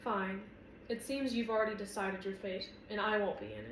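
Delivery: ordinary delivery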